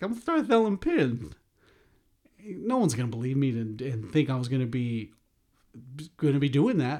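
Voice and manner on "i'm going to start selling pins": extremely dorky, very high-pitched voice. Announcing plans to sell pins, said in the dorkiest way possible. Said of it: "in the most dorkiest way possible".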